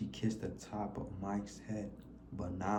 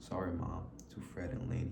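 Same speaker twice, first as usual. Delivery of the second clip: usual speaking voice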